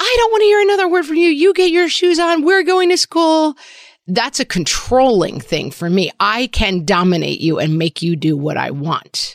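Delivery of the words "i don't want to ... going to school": shrill, very high, fast, crazed rage scream. Parent acting out their past self screaming at their kid: retelling screaming in rage. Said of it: "my screaming in my crazy rage voice".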